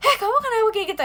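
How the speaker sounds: high, angry tone. Showing how a caps lock chat message reads aloud: angry tone. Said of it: "Itu marah".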